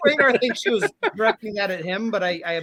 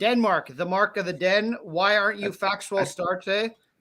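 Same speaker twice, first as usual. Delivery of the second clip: ordinary delivery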